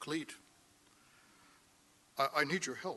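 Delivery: soft-spoken, quiet voice. Retelling a phone call from a man asking for help: imitating his soft voice. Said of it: "He had this kind of soft voice".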